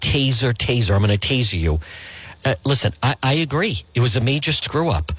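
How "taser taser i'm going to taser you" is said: normal talking voice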